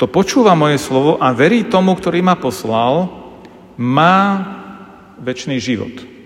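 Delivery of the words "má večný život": má hit hard with strong stress. Reading a verse aloud to highlight a small word, stress on má. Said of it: "ja ho teraz zdôrazním, keď prečítam tú vetu".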